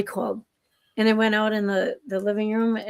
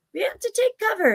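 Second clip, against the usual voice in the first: tiny, very high, squeaky mouse voice; 12 semitones higher than usual. Describing little critters coming in from the cold, the speaker voices them in a mouse voice. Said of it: "that was my mouse voice".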